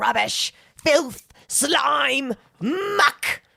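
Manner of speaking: each word hurled forcefully, pitched way up high. Quoting a scene from Princess Bride, imitating the old angry lady from Princess Bride. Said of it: "old angry lady in Princess Bride where she sees her in the dream and she's like".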